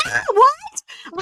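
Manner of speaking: mock startled, panicky outburst, pitched way up high. Retelling reading a friend's surprising text: retelling own panic.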